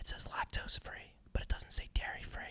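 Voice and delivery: hushed, barely audible whisper close to the ear. Retelling what someone whispered into his ear, whispering. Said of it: "she whispers into my ear".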